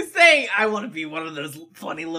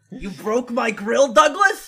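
practised cartoon clown character voice; 2 semitones higher than usual. The speaker shows off a long-practiced impression line: practiced impression voice. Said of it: "one of the impressions that I have practiced".

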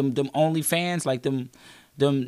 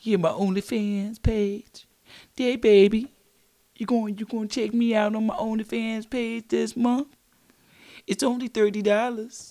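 put-on old lady voice, much higher; 7 semitones higher than usual. A comedian mimics a woman pitching her onlyfans page, in an old lady voice. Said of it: "She got that old lady voice".

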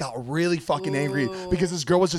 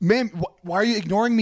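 acted anger, much higher pitch; 4 semitones higher than usual. Retelling a confrontation over a stolen card, acting out being really pissed. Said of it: "So I'm starting to get really pissed".

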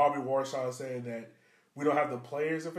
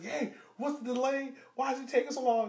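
put-on, shrill, very high-pitched, yelled voice; 10 semitones higher than usual. Retelling how a coach yelled at a player over a delay: imitating someone yelling. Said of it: "coach started yelling at Kato".

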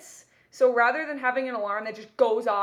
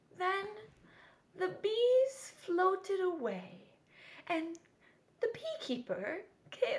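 put-on calm old lady storyteller voice, higher, quieter; 8 semitones higher, 8 dB quieter than usual. Retelling a bedtime story app's narrator: imitating a calm old lady's voice. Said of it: "a very calm voice".

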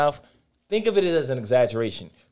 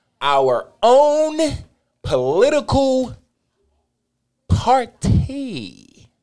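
very slow, high, deliberate, each word drawn out; 9 semitones higher, 4 dB louder than usual. Repeating what he just said too fast for the other speaker, very slow. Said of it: "I'm going to say it really slow for you".

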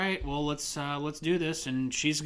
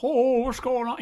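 put-on shrill, very high, loud old man voice; 9 semitones higher, 6 dB louder than usual. Describing a substitute teacher, showing how he sounded: old man impression. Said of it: "That's how he sounded".

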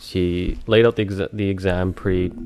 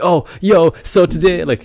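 fake hype, very high, loud and drawn out; 10 semitones higher, 8 dB louder than usual. Mocking a type of podcaster for listeners: mock full-of-energy voice. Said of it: "people that are full of energy, like".

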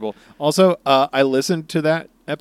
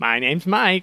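teasing, mocking parody voice, pitched up; 5 semitones higher than usual. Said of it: "You're just making fun of my voice".

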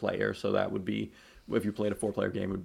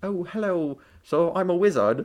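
very high, slow, drawn-out delivery; 9 semitones higher, 8 dB louder than usual. Imagining a character coming out from under the stairs: imitating Harry Potter. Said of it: "Harry Potter comes out and he's like".

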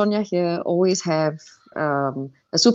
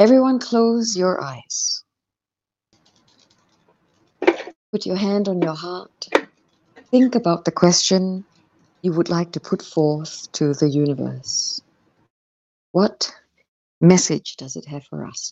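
slow, sultry, sexy, meditative guide voice. Asked by the host to lead everyone in a meditation: sexy meditative voice. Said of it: "would you give us your sexy meditative voice".

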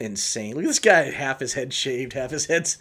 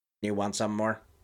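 lower, quieter computer robot voice; 5 semitones lower, 6 dB quieter than usual. Imitating a line from a film: computer robot voice. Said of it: "That's computer robot voice".

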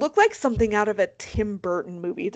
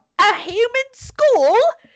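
very high, shrill, loud, terrible put-on English accent; 11 semitones higher, 5 dB louder than usual. Telling a story about people passing around a human skull, in a bad English accent. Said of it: "is that a good english accent".

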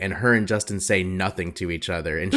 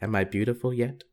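soft, eerie, unsettling, creepy put-on voice; 3 semitones higher, 5 dB quieter than usual. Retelling what they always ask Tin mid hair-dye, the speaker uses a put-on creepy voice. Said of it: "really creepily say".

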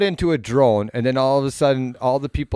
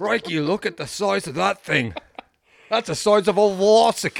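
high-pitched wildlife-presenter voice with an Australian accent; 8 semitones higher than usual. Voicing a creature as if it could talk: Steve Irwin voice. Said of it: "I'd make him Steve Irwin's voice".

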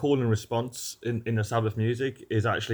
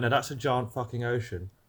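usual speaking voice

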